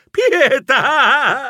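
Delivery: piercing, high, shrill shriek from the gut. The narrator, in pain from a stomped foot, shrieking.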